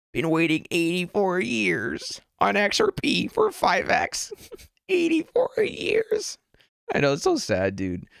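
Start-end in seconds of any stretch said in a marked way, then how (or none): 0.2-6.4 put-on very high, swooping elderly woman voice. Reading a viewer's donation message aloud: old lady voice. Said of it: "In the old lady voice".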